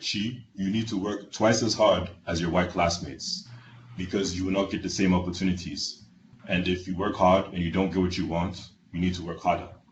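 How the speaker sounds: put-on heavy Nigerian English accent, laid on thick. Speaker quoting their father's daily morning pep talk, thick Nigerian accent. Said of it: "in his thick Nigerian accent".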